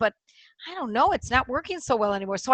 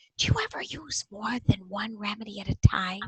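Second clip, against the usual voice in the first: soft, whispered under the breath; 4 semitones lower, 5 dB quieter than usual. Retelling a question asked to a homeopath, retelling a whisper. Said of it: "and I was whispering".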